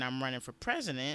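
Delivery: plain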